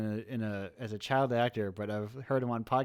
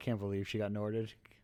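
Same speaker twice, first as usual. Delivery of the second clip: normal talking voice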